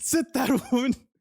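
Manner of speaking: high, loud mock yelling.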